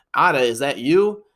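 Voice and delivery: normal talking voice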